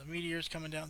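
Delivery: ordinary talk, nothing marked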